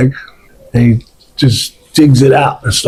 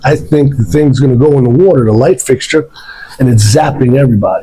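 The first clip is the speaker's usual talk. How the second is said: ordinary talk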